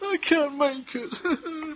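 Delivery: very high, soft, acted whimpering sob. Retelling what a paraplegic man said as he started crying, imitating someone crying. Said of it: "And he starts crying".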